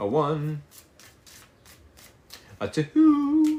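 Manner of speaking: voice cracking very high on "two". Tarot reader counting shuffles for viewers, voice cracking. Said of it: "my voice just cracked right there".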